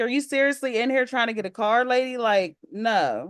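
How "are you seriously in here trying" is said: plain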